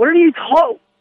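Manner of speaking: high-pitched, irritated outburst. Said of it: "I'm getting a little irritated".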